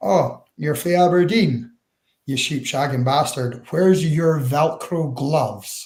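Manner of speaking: mock deadpan, flat delivery. Recalling a man met at the start, the speaker quotes him: retelling a deadpan jibe. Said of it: "he goes to me deadpan".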